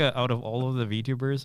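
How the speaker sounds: ordinary delivery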